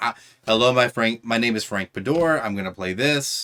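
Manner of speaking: normal talking voice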